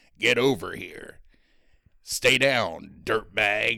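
slow demon voice with each line drawn out. Retelling how Ghost Rider delivers lines in the movie: Ghost Rider voice. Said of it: "so he's talking like this".

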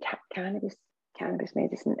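shamed, hushed half-whisper with stumbling words. Retelling asking a receptionist for it, imitating an embarrassed mumble. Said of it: "as if it was a, dirty word".

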